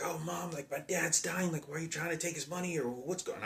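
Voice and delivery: very high, shrill, loud screaming. Recalling teenage arguments, the speaker re-enacts screaming at their mother: retelling screaming at mom. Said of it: "I'd be screaming at my mother like".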